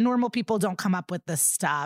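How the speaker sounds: ordinary talk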